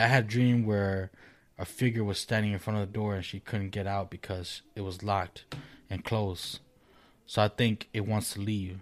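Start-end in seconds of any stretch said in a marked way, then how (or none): none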